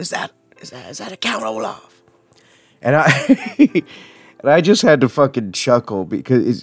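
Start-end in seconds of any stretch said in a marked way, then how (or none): 0.0-2.0 put-on raspy old man voice, higher, much quieter. Retelling what an old man asked the girl with him, in a raspy old man voice. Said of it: "real raspy voice".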